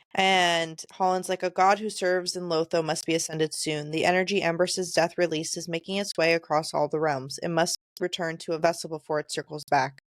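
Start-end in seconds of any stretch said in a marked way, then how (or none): none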